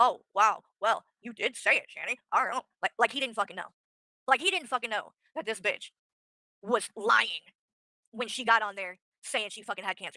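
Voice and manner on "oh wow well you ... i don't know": fake astonished, shocked innocence. Retelling someone acting surprised and shocked on a stream: imitating Rev acting surprised and shocked. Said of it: "acting surprised and shocked and like".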